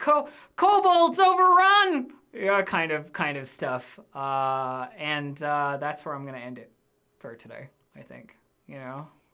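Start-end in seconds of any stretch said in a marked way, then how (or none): 0.0-2.1 put-on high, loud shout in little boy town-crier voice. Voicing a young boy town crier shouting local news: young boy town crier yelling. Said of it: "you hear him yelling".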